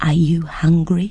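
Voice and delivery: mild, gentle tone. Reading a story, a character leans forward to ask the dragon: softly. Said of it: "said softly".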